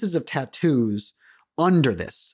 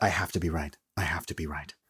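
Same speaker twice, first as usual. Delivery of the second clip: very quiet, low, hushed mutter under the breath; 9 semitones lower, 9 dB quieter than usual. A storyteller voices a man who doesn't notice the players, muttering under his breath. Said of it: "say under his breath".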